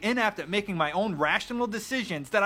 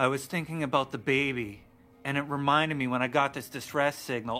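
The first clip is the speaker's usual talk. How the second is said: mock low, flat, sad, deflated monotone; 6 semitones lower than usual. Describing a game cutscene, imitating the female lead's sad monotone voice. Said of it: "All in this monotone, sad, not strong female lead role voice".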